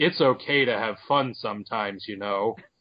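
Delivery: faintly sarcastic, school principal style voice. Retelling a show character's line like a school principal: imitating a school principal, almost sarcastic. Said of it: "the way your school principal would say it, almost sarcastically".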